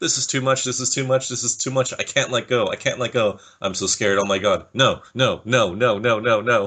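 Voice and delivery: mock-despairing, dejected, panicked put-on pleading. Retelling how he freaked out and said he couldn't do it, imitating dejected freaking out. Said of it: "every single dejected phrase".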